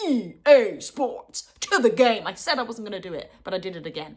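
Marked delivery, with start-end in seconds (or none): 0.0-2.3 put-on slow, over-the-top American accent. Mocking a game intro slogan, crazy American EA Sports accent. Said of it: "that crazy American accent going like".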